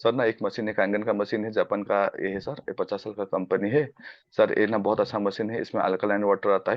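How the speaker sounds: dull, droning, low, flat monotone. Showing a way of talking that would put listeners to sleep: flat monotone. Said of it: "जैसे कि मैं ऐसे बोलता हूँ ... आदमी सो जाएगा".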